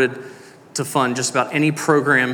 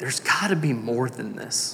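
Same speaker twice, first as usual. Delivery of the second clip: put-on, very sad tone, quieter; 6 dB quieter than usual. Quoting a player after his third Super Bowl, retelling it very sadly. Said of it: "very sadly".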